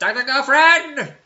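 very high, very loud shriek at top of lungs. Imagining dressing as a villain at work: the Monarch voice. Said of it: "dress as the Monarch from".

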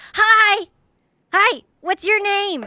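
high-pitched, loud yelling. Playing a character who sees another child: yelling a greeting. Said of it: "just yells".

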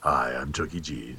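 very low, very hushed, drawn-out seductive voice. Showing off a dating voice: put-on soothing, seductive voice. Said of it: "This is going to be my dating voice. ... That's soothing and sexy".

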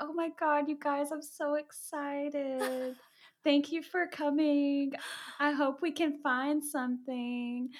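put-on adorable, slow, cute little babyish voice. Retelling a woman's greeting at a ghost hunt, imitating a cute baby voice. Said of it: "she has like this cute little like baby voice".

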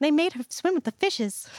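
put-on eerie, creepy little child voice, high pitch. Quoting what the child says, in a creepy little child voice. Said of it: "and your creepy little child voice".

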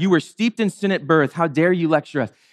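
usual speaking voice

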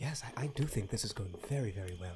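mumbling under his breath. Voicing a character muttering to himself: muttering to himself. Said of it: "muttering to himself".

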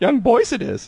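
very high, short, creature-like alien voice. Answering a question put to Yoda: Yoda voice. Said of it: "Yoda, tell me".

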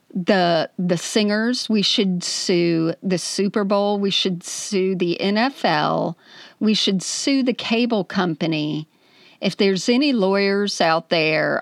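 ordinary delivery

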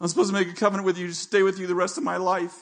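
weeping through the words. Retelling a tearful promise said in a dark car: retelling a tearful line. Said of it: "in tears".

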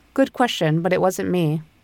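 ordinary talk, nothing marked

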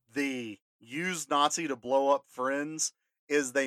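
ordinary delivery

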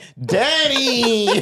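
put-on very high childlike begging, word stretched out. Speaker acts out himself as a boy getting a haircut from his dad, imitating his childhood begging. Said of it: "I'm in there begging my dad".

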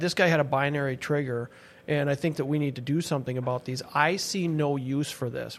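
ordinary delivery

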